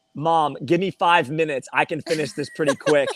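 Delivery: ordinary delivery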